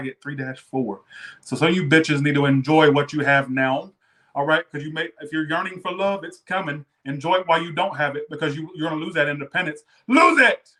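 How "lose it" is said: sudden, abrupt, very high, shrill scream. Telling the listener to enjoy being single: sudden scream. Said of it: "I don't know why I just screamed that".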